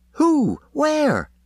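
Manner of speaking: very high, keen, eager voice. Reading a novel, the narrator voices Gold asking back after Miss Deuce, more eagerly. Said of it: "Gold asked more eagerly".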